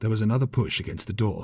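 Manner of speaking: plain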